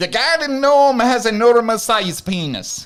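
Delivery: very high-pitched, loud Irish accent. Asked by the others to say the next line in an accent, Irish accent. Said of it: "do that one in an Irish accent".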